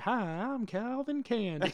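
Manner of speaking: wild, exaggerated Southern accent, pitched high. Describing a Terminator video, imitating Arnold with a crazy southern accent. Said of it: "he's got this crazy southern accent".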